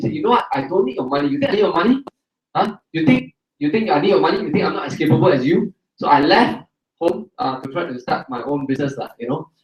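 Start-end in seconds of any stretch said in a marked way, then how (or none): none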